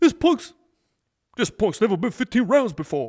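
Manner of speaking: loud belting voice. Recalling a line Apollo said about fifteen rounds, doing an Apollo impression. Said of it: "That's my best Apollo".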